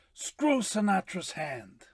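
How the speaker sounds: put-on gruff movie-star voice. Saying hi to the podcast host in an Al Pacino impression. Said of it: "That's a good Pacino".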